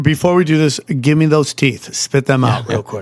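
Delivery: ordinary delivery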